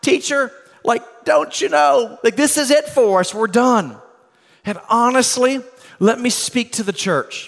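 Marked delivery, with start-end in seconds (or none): 0.0-4.0 high, panicked shouting. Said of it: "And they were shouting".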